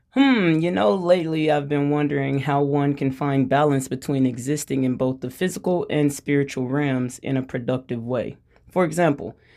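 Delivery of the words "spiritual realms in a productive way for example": ordinary talk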